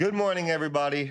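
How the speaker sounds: really loud, high-pitched shouting yell. Greeting everybody after announcing a yell, yelling really loudly. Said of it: "I'm just gonna yell really loudly".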